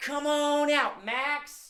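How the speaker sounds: big, loud, high calling out. Leading everyone in calling the cat out, in a big voice. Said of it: "let's call her out in a big voice".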